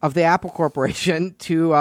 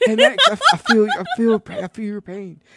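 put-on Southern politician voice, higher pitch; 4 semitones higher than usual. Retelling a phone call after being asked for this voice: Bill Clinton voice. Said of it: "do his voice like he's Bill Clinton".

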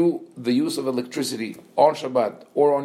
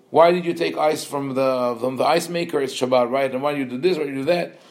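plain

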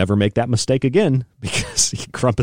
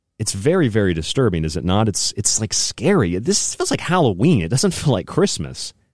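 ordinary talk, nothing marked

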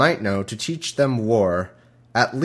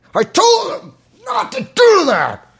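put-on angry yell, much higher, louder; 7 dB louder than usual. Imitating a man who yells at everybody, mock-angry yelling. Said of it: "he must cough a lot trying to talk like that".

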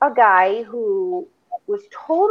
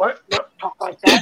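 sudden touchy, defensive outburst; 4 semitones lower than usual. Retelling how a guy reacted to a remark: imitating a defensive outburst. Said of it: "He just got so defensive about it".

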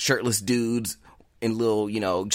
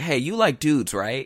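put-on, femme-sounding feminine voice; 3 semitones higher than usual. Speaker retells what a kid they had never met said to them: imitating a feminine voice. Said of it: "kind of like a feminine voice".

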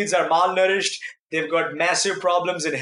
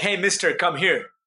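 mock-commanding, bossy tone. Retelling how a woman ordered the speaker to come over, imitating a bossy order. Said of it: "kind of, you know, ordering me".

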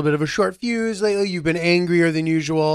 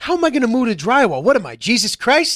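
put-on strong New York accent, pitched up, complaining; 7 semitones higher, 3 dB louder than usual. Retelling an overheard phone complaint about a boss: very new york guy voice. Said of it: "a very New York guy".

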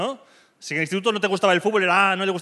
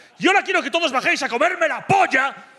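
play-acted, high, raised stadium-style rallying yell; 9 semitones higher, 3 dB louder than usual. Imagining what a footballer would yell to the whole stadium: Cristiano Ronaldo yelling. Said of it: "les grita".

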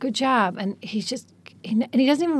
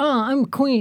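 lazy, half-hearted voice, tossed off with no effort; 3 semitones higher than usual. Retelling how he lazily does impressions of everybody: imitating a lazy impression. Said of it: "He does it the exact same way about everybody".

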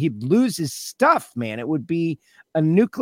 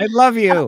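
pointedly passive-aggressive affection, pitched up, acted; 6 semitones higher, 3 dB louder than usual. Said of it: "Passive aggressive, right?".

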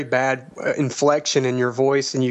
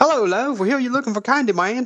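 put-on Southern accent, much higher pitch; 10 semitones higher than usual. Group trading accents, one speaker takes a turn, southern Justin accent. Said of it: "that sounds southern".

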